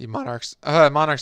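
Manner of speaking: voice cracking. Recapping a game, voice cracking. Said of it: "excuse my voice cracking".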